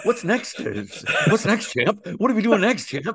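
put-on cartoon puppy voice. Speaker asks the other speaker what comes next, little cartoon dog voice. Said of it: "I feel like that little cartoon dog".

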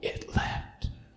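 muttered under the breath. Retelling a man's reaction after being prayed over, quietly under his breath. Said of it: "Quietly under his breath".

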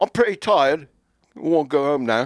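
put-on British accent. Joking about an english swimmer, repeating the line in a put-on british accent. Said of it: "Only with a British accent".

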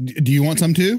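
mock, put-on stern, threatening tone. Co-host retells the speaker confronting a staring kid's parent, imitating a stern threat. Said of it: "And you're sternly like".

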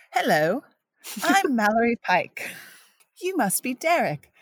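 bad, high-pitched fake English accent. Asked by another speaker to perform the lines in a bad english accent. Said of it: "You have to do it in an English accent".

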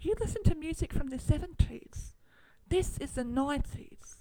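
put-on high-pitched, fast Australian accent. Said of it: "not in an Australian accent".

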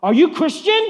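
shrill, very loud, full-volume yell. Retelling how a boy yelled at the speaker on a crowded train, retelling a boy's yell. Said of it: "he yells in the crowded train".

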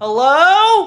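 stretched, loud, very high, drawn-out yell. Pounding on a locked rv door and calling out: yelling hello. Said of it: "that was me yelling that".

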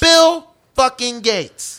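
very loud, high-pitched voice belted at full blast.

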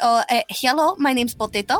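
put-on Russian accent. Describing their recorded potato talk, demonstrating it in a put-on Russian accent. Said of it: "We talk like this and say".

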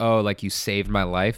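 imitated weepy, tearful voice. Describing a movie's romantic scenes, imitating a weepy character. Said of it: "kinda weepy".

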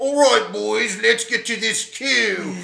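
put-on loud high Cockney accent. Describing an actor playing a field marshal in a comedy, do Rupert Friend's Cockney English accent. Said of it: "his normal like fucking Cockney English accent".

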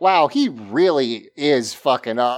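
ordinary talk, nothing marked

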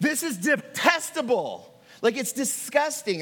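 openly angry voice. Condemning what a pastor said to a grieving widow: angry. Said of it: "I want you to hear the anger in my voice".

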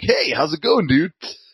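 bright, cheery, high. Retelling a comic scene, quoting Glob greeting Mojo: cheery Glob voice. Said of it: "this guy is very cheery".

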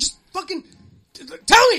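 mock-panicked yell. Retelling what you yelled when she couldn't say it: retelling a panicked outburst. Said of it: "I'm fucking freaking out right now".

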